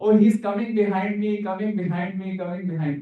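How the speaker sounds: mock calling out, repeated over and over. Recalling a failed attempt to catch something thrown, the speaker is retelling a shout. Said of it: "I am shouting".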